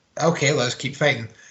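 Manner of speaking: normal talking voice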